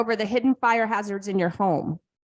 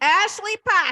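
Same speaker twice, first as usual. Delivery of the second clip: New Hampshire accent on the name, pitched up; 9 semitones higher than usual. Host reads out a commenter's name in a New Hampshire accent. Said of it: "Say it with my uh, New Hampshire accent".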